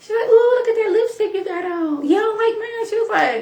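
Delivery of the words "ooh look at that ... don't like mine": put-on childlike little-girl voice and speech. Retelling what a little girl said, imitating Heavenly's voice. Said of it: "I'm doing Heavenly's voice".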